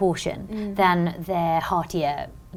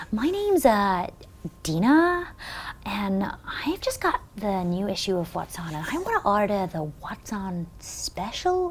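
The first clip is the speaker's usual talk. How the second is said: bad, terrible, fake put-on American accent; 2 semitones higher, 4 dB quieter than usual. Speaker retelling a phone call ordering a magazine special, in a bad american accent. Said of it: "American accent, of course".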